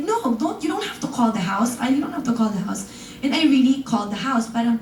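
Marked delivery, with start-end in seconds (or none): none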